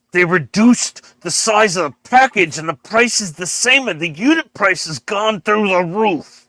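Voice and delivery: quiet muttered scream. Retelling ranting to himself in a supermarket aisle: imitating screaming quietly under breath. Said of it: "screaming that very quietly under my breath".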